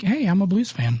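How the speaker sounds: ordinary talk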